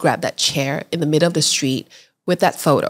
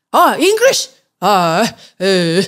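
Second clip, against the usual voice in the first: put-on surprised, startled old man voice. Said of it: "like that".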